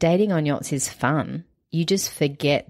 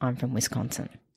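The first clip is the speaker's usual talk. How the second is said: hushed, soft half-whisper under the breath; 3 semitones lower, 7 dB quieter than usual. Acting out Margot as she exits stage left, half-whispering under her breath.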